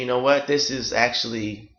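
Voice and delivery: ordinary talk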